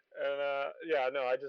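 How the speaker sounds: ordinary delivery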